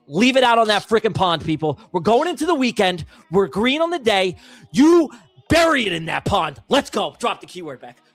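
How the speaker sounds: pumped-up, fired-up, energetic rallying voice. Rallying people before the last race, pumped up. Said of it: "I'm pumped up".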